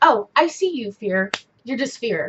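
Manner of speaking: plain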